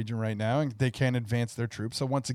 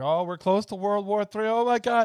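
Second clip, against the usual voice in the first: mock panicked, alarmed, high-pitched fretting; 8 semitones higher than usual. Retelling how someone reacted when the war started: imitating someone panicking. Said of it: "she was panicking".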